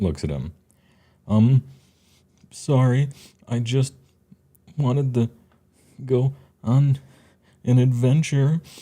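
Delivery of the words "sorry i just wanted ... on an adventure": crying through the words, high, halting, breaking up. Voicing a character who is still crying and pulling a sleeve: crying while speaking. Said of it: "Henya is still crying".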